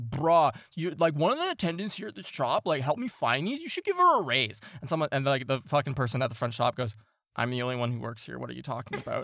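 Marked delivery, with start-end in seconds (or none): 0.0-4.6 loud, lively, boisterous holler, swooping and rising. Retelling a customer speaking up at a shop's front counter: imitating a boisterous voice. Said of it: "You hear his boisterous voice go like".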